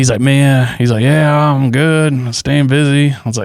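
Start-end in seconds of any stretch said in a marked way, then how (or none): 1.0-3.1 raised, drawn-out drawling voice. Retelling how a friend answered a check-in call: imitating Dan's drawl. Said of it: "he's got this drawl".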